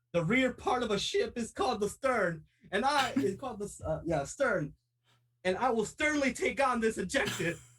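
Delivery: high, full-throated shout at top of lungs. Player's character running down, shouting at the top of lungs. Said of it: "I am just shouting at the top of my lungs".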